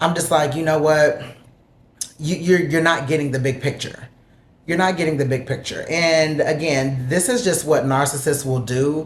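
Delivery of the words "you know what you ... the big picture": mock, tearful words coming through crying. Retelling a fight while packing to leave: retelling own tearful words. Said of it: "I'm crying in front of him".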